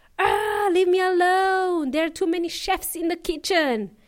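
mock fed-up, exasperated cry of frustration. Acting out someone fed up with advice in the kitchen: exasperated outburst. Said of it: "You go mental".

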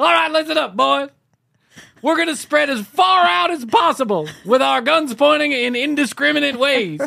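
put-on commander yell, very high, rough and rasping. Giving the boys a plan for spreading out: mock yelling. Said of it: "Not sure why I'm yelling".

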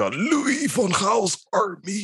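harsh, very high, slow, drawn-out voice. Quoting the national coach's words: harsh Louis van Gaal voice. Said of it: "says that with that very harsh, uh, harsh voice of his".

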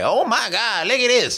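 high-pitched, slow voice. Acting out characters back in Queens reacting: the Barbers voice. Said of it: "that was the Barbers".

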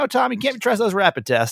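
normal talking voice

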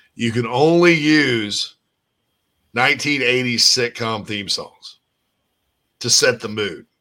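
ordinary delivery

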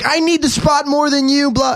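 angry outburst. Retelling how a woman took a parking spot: imitating a woman freaking out. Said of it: "she started freaking out at me".

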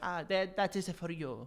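exaggerated Italian accent. Imagining the patron saint of lost things handing over the item, St. Anthony in stereotypical Italian accent. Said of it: "I got my stereotypical Italian voices down".

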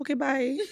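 quiet little voice. Retelling a clip where Peppa hangs up on a friend: imitating someone saying it quietly. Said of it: "like, quietly".

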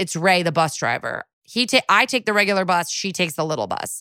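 normal talking voice

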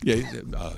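low, hushed, polite tone.

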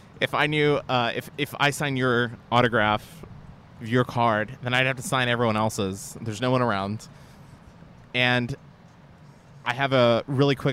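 ordinary delivery

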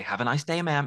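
put-on American accent. Sharing the phrase used with Mom to end calls, in an American accent. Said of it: "in an American accent".

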